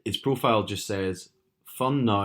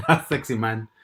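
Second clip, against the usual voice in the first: attempted, put-on French accent; 2 semitones higher, 4 dB louder than usual. Retelling a message someone sent on an app, in a French accent.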